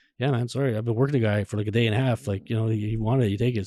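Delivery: plain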